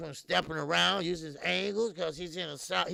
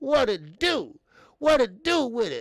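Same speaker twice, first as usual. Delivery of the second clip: very loud, raised, high-pitched shout; 5 semitones higher, 8 dB louder than usual. Greeting someone on air: imitating Keon's voice. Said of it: "I'm like in the Keon voice".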